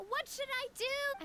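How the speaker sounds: mild mock yell in distress, high and slow.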